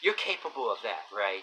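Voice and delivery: dripping with sarcasm, needling, acted out. Speaker imitates a woman at work answering his request, mimicking a sarcastic tone. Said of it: "she goes all sarcastically with this tone".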